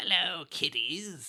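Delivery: high-pitched horror host voice. Trying an impersonation that never works: Crypt Keeper impression. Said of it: "impersonation I can never do".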